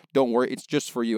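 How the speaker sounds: ordinary talk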